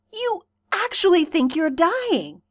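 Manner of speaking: breathed pity. Narrating fiction, he speaks to Carcat with sudden pity: breathed. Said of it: "he breathes".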